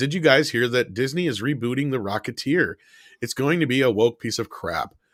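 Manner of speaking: ordinary delivery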